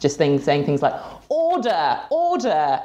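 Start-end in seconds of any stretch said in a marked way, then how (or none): 1.3-2.8 put-on very high, swooping, pompous British accent. Describing viral videos from Germany, Spain and Italy, doing a John Bercow impression, pompous accent. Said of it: "a stereotypical British man with a very pompous accent".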